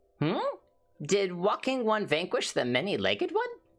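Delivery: put-on sing-song, swooping, high elderly grandma voice. Giving an old grandma character her voice: old grandma voice. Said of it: "I gotta give her a grandma's voice".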